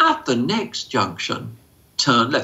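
calm, even, patient, unbothered sing-song sat-nav voice. Showing how a GPS gives directions: imitating a calm GPS voice. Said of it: "The G P S very calmly says".

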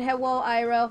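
ordinary talk, nothing marked

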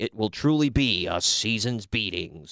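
cheesy, drawn-out promo voiceover, every word milked. Retelling an opening package voiceover: imitating Todd Pettengill's cheesy voiceover. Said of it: "voiceover from Todd Pettengill were so cheesy".

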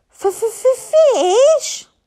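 very high, loud hiss with stuttered f. Reading aloud a dragon's word after being thrown off, hissing Toothless voice. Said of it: "hissed Toothless".

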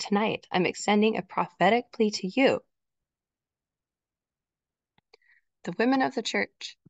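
moved, heartfelt, earnest, emotional delivery. Speaker making a plea to the women of the church: getting emotional. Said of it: "I'm getting a little emotional".

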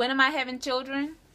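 usual speaking voice

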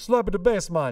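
loud, high, clumsy put-on Jamaican accent. Quoting a movie character trying to do Jamaican, in an attempted Jamaican accent. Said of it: "he's trying to do Jamaican".

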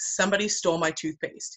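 ordinary talk

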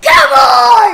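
yelling loudly. Player during a Game of Life session, someone asks why they're shouting. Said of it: "Why are you shouting?".

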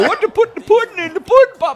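put-on high-pitched, loud, laughing voice.

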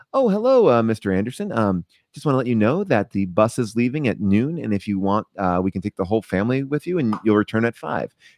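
plain, straightforward reading with no acting at all. Imitating another actor playing Hotel Clerk addressing a family: flat, no-acting line read. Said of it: "no acting, no anything, just like information".

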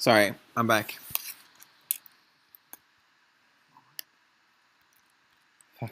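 breathless, out of breath. Coming back to the stream after chasing a dog, out of breath. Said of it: "Legit got me out of breath".

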